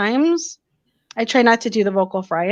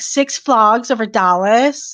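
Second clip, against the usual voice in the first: put-on slow Valley Girl accent. Retelling how he repeated her words back to her; Valley Girl accent. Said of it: "it was like the Valley Girl thing".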